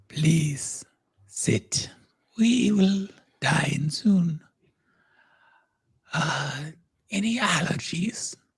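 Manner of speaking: thick, rasping, clotted croak. Narrator voicing a creature addressing the listeners, rasping, clotted voice. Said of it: "you hear a rasping, clotted voice say".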